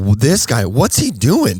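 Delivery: full cheery, sing-song, sarcastic put-on voice. Retelling reacting to the biker looking around: retelling own happy sarcasm. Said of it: "I'm in full happy sarcasm".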